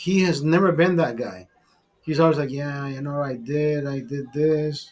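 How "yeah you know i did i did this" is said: acted limp, unexcited, droopy flat low monotone mumble. Speaker imitating a man who never sounds enthusiastic, in a droopy, flat voice. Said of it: "he's like droopy".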